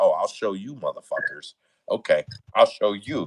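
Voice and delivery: put-on voice with attitude, defiant. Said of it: "with an attitude".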